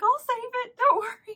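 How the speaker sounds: very high, loud mock reassuring squeal. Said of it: "My mom was like".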